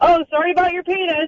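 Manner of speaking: high, fast put-on yell. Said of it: "So I'm in the living room yelling".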